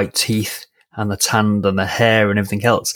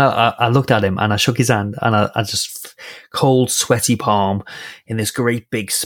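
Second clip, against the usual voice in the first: plain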